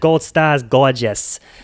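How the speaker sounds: put-on Boston accent. Describing a clip, acting out what Laurel says: imitating Laurel, Boston accent. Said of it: "Boston accent".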